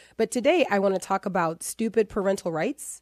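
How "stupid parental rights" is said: dry tone loaded with sarcastic inflection. Announcing the title of today's show: sarcastic inflection. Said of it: "nail the inflection so that people understand my sarcasm".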